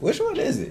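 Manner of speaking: high confused aside. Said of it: "I'm like".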